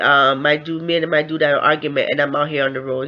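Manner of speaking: ordinary talk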